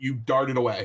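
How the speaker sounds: ordinary talk, nothing marked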